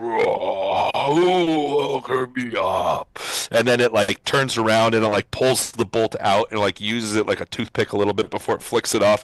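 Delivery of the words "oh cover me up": huge giant golem voice, very slow and drawn out. Describing a mud golem waking up and stretching, as it speaks: booming golem voice. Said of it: "you hear this booming voice".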